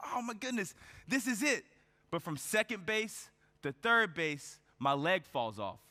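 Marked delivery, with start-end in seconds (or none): 0.1-1.6 play-acted ecstatic, excited cheering scream. Retelling a father cheering at a baseball game: imitating someone screaming. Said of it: "He's screaming like".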